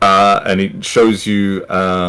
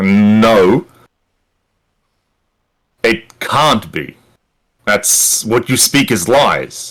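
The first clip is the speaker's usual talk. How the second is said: angry character voice. Voicing a character who looks at the player with anger: angry character. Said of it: "he looks at you with an angry expression on his face and he goes".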